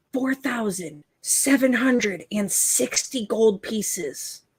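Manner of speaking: very quiet, guarded, slow and deliberate delivery. Telling the group their gold total, wary of eavesdroppers: saying it very quietly. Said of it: "I'll say it very quietly".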